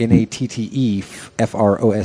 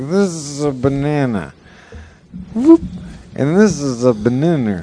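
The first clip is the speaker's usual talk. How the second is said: put-on drunk talk, slower; 5 semitones higher than usual. Explaining a woman's joke, the speaker imitates how she talks when drunk. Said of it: "when she's drunk and she's talking like this".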